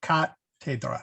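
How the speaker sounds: cathedra with the first syllable ca stressed. Agreeing on the pronunciation, stress on first syllable of cathedra. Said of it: "It is on the first syllable".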